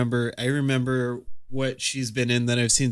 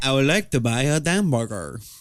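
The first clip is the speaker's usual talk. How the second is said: put-on exaggerated French accent. Mocking a movie remake's lead, imitating his line: Steve Martin's French accent. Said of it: "Perfect French accent".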